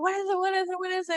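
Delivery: frantic, very high, rattled-off repeated panicked words. Retelling how the husband jerked out of bed, imitating panicked husband. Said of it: "And we're going crazy".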